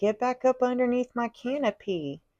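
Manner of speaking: high cartoon screaming tree voice, imitated. Describing a cartoon-like vision, voicing a tree: imitating a screaming tree. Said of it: "the tree is screaming".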